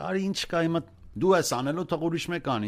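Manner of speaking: bossy, high, rattled-off nagging in Armenian.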